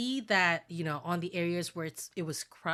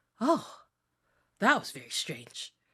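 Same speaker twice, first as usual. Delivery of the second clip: strange, odd-sounding creature voice; 4 dB louder than usual. Voicing a floating eye creature that speaks to the players: voicing a strange eye creature. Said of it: "the eye ... looks at you and goes".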